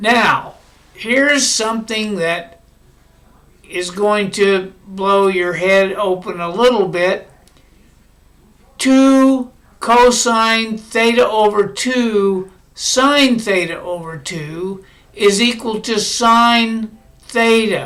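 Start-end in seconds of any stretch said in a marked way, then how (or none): 8.8-17.9 slow, measured, deliberate, step-by-step delivery. Lecturer explaining a step to the audience, speaking slowly. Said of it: "I say that slowly".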